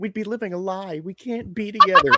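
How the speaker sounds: put-on stiff, emotionless delivery. Mocking a woman's lines to Anakin, the speaker does a mock-wooden line reading. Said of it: "it's so wooden".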